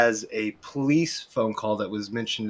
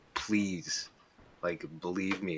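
put-on pleading girl voice, quieter and slower; 3 semitones lower, 10 dB quieter than usual. Retelling a crying girl begging her grandmother, imitating a girl pleading. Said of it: "pleading in her grandmother".

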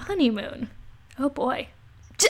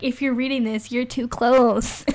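ordinary delivery

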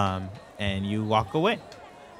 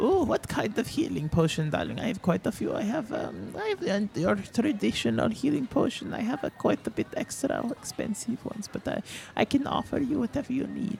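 put-on old woman voice, higher, quieter; 11 semitones higher, 7 dB quieter than usual. Playing a potion seller answering a customer, old woman voice. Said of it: "old-looking woman".

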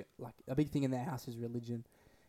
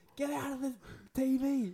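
mock full-out yell, very high, drawn out; 13 semitones higher than usual. Retelling yelling at a brother blocking the TV: retelling a yell. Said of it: "I'm full, like, yelled".

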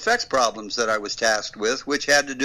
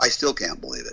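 normal talking voice

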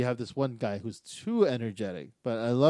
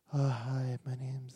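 put-on very soft-spoken, hushed girl's voice; 6 dB quieter than usual. Describing the other candidate, imitating a soft-spoken girl. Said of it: "very soft-spoken girl".

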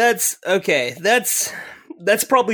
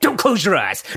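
imitated elderly man yell; 2 semitones higher than usual. Retelling a grandfather at the shooting range: imitating a grandfather yelling. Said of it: "a grandfather yelling at you".

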